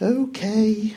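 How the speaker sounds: whispering. Doris replies to Death, whispering. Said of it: "she whispered".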